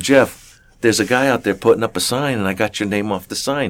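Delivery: ordinary talk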